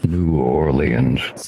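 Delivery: very low voice, New Orleans pronounced syllable by syllable. Retelling a TikTok video, Marcus the Worm saying every syllable of New Orleans. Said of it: "every syllable in New Orleans".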